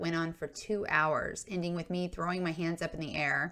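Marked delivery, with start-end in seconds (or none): none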